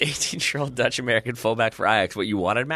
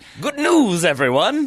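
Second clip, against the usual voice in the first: pitched-up announcer-style delivery; 9 semitones higher, 5 dB louder than usual. Reporting a football transfer, quoting what a player says, Professor Farnsworth voice. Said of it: "in a Professor Hubert Farnsworth voice".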